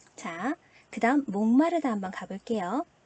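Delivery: ordinary talk, nothing marked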